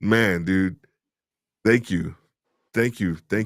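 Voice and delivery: restrained emotional voice. Thanking someone whose words just hit a chord, trying not to get emotional. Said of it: "I'm trying my best not to get emotional".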